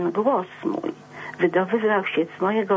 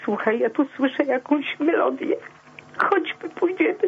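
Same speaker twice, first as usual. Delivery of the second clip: tearful, pitched-up crying voice; 7 semitones higher than usual. Recounting a painful memory, the speaker breaks into tears: crying while speaking. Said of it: "Przepraszam, że płaczę".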